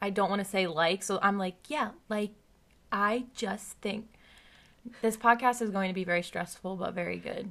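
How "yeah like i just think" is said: machine-like robotic speech, mechanical, carefully policed phrasing. Retelling how she now talks while avoiding filler words: imitating her robotic talking. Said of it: "I'm talking like a robot".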